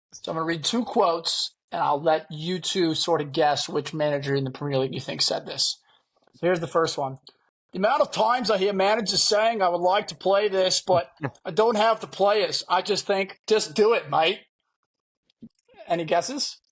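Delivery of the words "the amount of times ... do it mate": put-on Aussie accent. Reading out a Premier League manager's quote in a guessing game, in a Big Ange voice, Australian accent.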